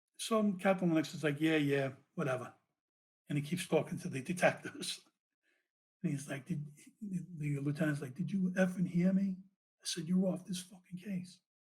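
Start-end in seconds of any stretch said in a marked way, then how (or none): 8.2-11.4 mock screaming, higher pitch. Retelling how a lieutenant yelled at a captain, retelling a scream. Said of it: "he's screaming at the captain".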